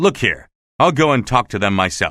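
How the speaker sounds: plain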